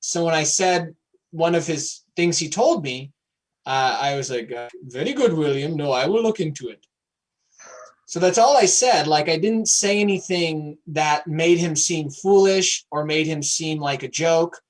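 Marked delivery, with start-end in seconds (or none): 4.8-6.9 friendly put-on Indian accent. Retelling a friend's words from a lecture story: imitating an Indian accent. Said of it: "I used an Indian accent".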